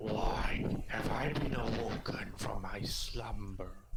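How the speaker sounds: low, booming, monstrous voice of an ancient sea creature.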